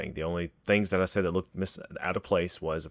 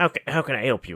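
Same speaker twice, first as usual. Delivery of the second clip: put-on shriveled, high, loud old dwarf voice; 7 semitones higher, 6 dB louder than usual. Voicing a neighbor who answers a knock at the door, old dwarf character voice. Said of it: "this is old dwarven looking fellow".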